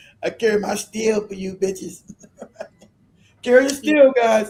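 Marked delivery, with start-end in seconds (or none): 0.2-2.0 put-on Louisiana accent. Signing off to viewers in a put-on louisiana accent. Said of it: "That's a Louisiana accent".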